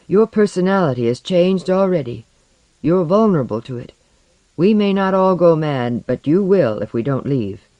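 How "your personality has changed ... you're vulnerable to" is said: ordinary delivery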